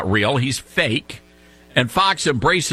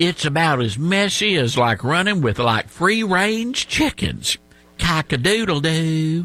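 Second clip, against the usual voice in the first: exaggerated put-on Southern accent. Mocking a senator's folksy sayings on TV: John Kennedy exaggerated Southern accent. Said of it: "really exaggerated Southern accent".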